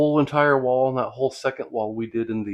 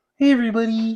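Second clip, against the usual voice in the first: loud, high-pitched puppet-style voice; 11 semitones higher, 5 dB louder than usual. Asked which puppet they are, speaker does a Kermit the Frog voice. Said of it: "that sounds like Ernie".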